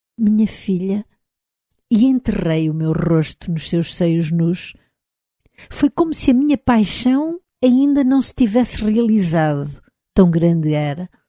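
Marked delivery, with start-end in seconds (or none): 0.2-1.1 murmured, higher pitch. Narrator reads the storyteller's own words to the woman: murmured. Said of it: "eu murmurei".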